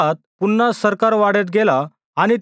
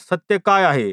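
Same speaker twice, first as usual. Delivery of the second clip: usual speaking voice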